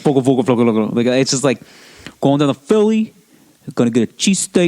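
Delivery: put-on marble-mouthed mumbling voice. Imitating your uncle from philadelphia, talking like he has a mouthful of marbles. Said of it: "sounded like he had a mouthful of marbles".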